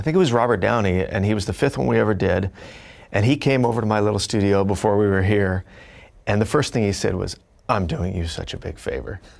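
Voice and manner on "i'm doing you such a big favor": joking, soft, sarcastic, mock-grand quip. Recalling what a guest first said at the studio, retelling a sarcastic joke.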